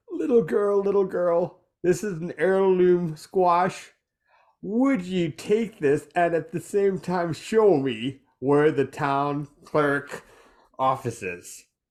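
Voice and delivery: mildly creepy, a little unsettling stranger voice. Offering a squash to a little girl in character: a little creepy. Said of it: "not a creepy old man, but a little creepy".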